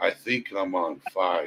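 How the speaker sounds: very quiet, mock-nonchalant, stoned-sounding drawl. Repeating what a stoned man said, imitating his nonchalant stoned voice. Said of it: "Just nonchalant".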